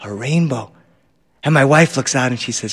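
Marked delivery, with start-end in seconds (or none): 0.0-0.7 reverent, soft, prayerful hush, like an incantation. Retelling a son seeing a rainbow: imitating a prayerful hush. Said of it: "like an incantation, like a prayer".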